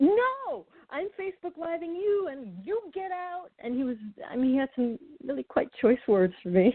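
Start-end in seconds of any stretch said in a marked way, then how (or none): 0.0-3.5 high, hot-tempered, angry male outburst. Farah retells how a man answered when she asked to talk, mock-angry. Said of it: "he was hot and he was angry".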